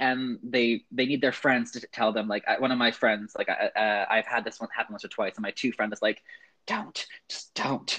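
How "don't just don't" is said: hushed, breathy whisper. Retelling how a friend whispered to stop sharing a weird fact: imitating a friend whispering.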